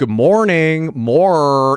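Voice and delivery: heavy American R. Describing american accents that really pronounce the r: heavy r in morning. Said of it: "some of the American accents um, really pronounce the R. So it'll be like".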